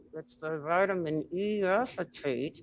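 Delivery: slow, held-back speech through clenched teeth. Retelling own past words about the vape cause: imitating saying it through gritted teeth. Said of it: "gritting my teeth and saying".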